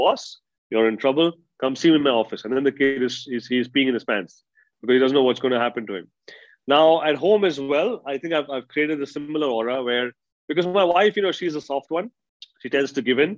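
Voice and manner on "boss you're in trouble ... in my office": plain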